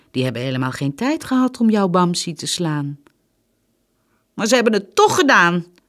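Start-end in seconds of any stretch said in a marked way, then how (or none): 4.4-5.7 high, shrill screaming outburst. Lotta answers her mama, who says it was only a dream, screaming. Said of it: "schreeuwde Lotta".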